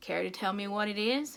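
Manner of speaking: ordinary delivery, nothing marked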